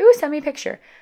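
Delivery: high, loud, eager, flirty cooing voice.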